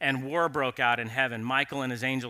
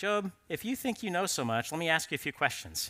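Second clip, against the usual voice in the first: put-on, heavily sarcastic tone with swinging pitch; 4 semitones higher, 5 dB quieter than usual. Retelling God questioning Job in the speaker's own words: imitating God, mock sarcastic. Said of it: "with a bit of sarcasm here".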